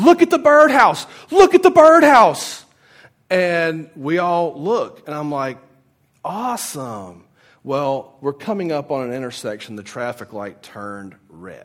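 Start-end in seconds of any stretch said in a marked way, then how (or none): 0.0-2.6 very high, very loud, shrill, piercing screamed shout. Retelling how a friend's date leaned between the front seats: imitating someone screaming. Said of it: "just starts pointing and screaming".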